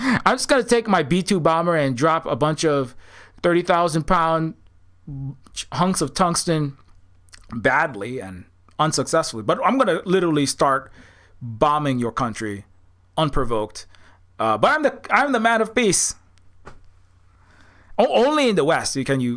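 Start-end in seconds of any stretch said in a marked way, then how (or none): none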